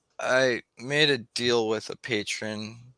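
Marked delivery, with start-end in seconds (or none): none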